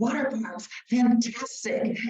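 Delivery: high, slow, delighted exclamation. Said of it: "and he says".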